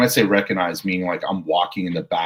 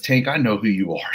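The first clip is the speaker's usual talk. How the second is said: put-on annoyed, irritated yell; 3 semitones higher than usual. Retelling what a woman yelled at the speaker over the radio, imitating an irritated yell. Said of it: "she's yelling it at me like she's irritated".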